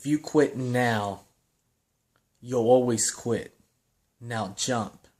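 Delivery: deep, slow drill instructor voice, close to ear. Retelling a drill instructor speaking into a frozen diver's ear, deep quiet voice. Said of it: "a deep voice quietly saying in my ear".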